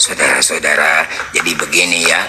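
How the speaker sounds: feeble, weak, very low-pitched voice. Speaker shows the audience how his voice would sound; weak voice. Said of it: "kalau suara saya jadi lemah".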